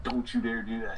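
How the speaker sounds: ordinary talk, nothing marked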